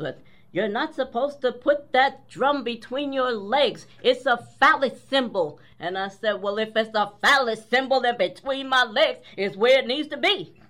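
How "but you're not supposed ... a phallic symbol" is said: put-on voice of an elderly woman. Retelling what an elder lady told the speaker about playing the drum, mimicking her voice. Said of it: "pardon my mimicking her voice".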